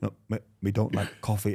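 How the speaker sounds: put-on street slang voice. Retelling a comedy sketch in which Ali G takes Welsh lessons: Ali G voice. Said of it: "the Ali G character goes to Wales".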